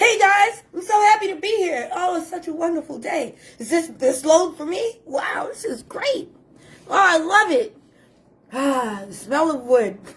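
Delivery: high, gushing, beaming, fake enthusiastic cheer. Acting out a new worker putting on a show at the job: imitating a new worker acting overjoyed. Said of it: "an opportunity for you to be a really good actor".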